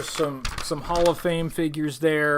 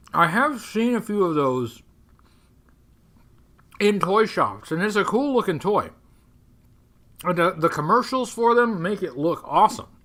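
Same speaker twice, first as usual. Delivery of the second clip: talking with mouth full; 4 semitones higher, 4 dB louder than usual. A host describes a toy someone wanted, talking while eating. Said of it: "I'm eating".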